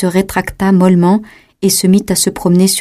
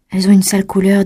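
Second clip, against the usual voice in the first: plain reading voice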